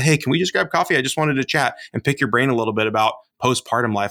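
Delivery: ordinary delivery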